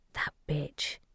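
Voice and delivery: muttering under the breath. Reading a story aloud, a character curses another: grumbling under her breath. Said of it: "Shadow grumbled under her breath".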